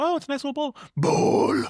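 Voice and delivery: loud, booming, monstrous demon voice. Imitating a girl who goes into the store and finds a bowl, in a demon voice. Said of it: "she does like the the demon voice".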